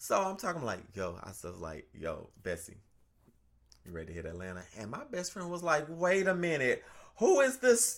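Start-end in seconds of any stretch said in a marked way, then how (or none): 1.9-4.6 put-on tough voice, very deep and soft. Speaker retells how she spoke to a woman in front of her best friend; butched-up put-on voice. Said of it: "change my voice a little bit".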